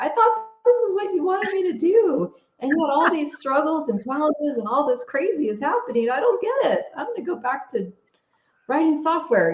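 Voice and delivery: high, pleading voice. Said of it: "we start begging the universe, like".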